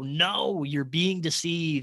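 firm, authoritative, commanding voice. Recalling a voice heard from the tub, imitating a loud commanding voice. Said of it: "I hear this loud commanding voice go".

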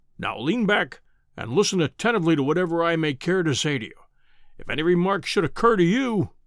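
plain reading voice

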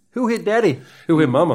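put-on New York accent, loud and high. Taking your turn with a co-host, speaking in a New York accent. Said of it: "It was a New York accent".

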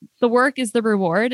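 plain

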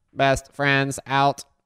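attempted put-on robot voice. Signing off a podcast episode with a co-host, in a robot voice. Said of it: "I was trying to do my robot voice".

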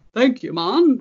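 put-on botched British accent. Retelling what a friend said to a delivery driver: mangled British accent. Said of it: "in the pro-, proper accent that I just mangled".

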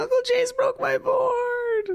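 mock tearful, crying little kid, very high. Retelling how his friend's son came out after the board snapped, imitating a crying child. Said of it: "He's crying".

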